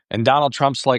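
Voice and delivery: ordinary talk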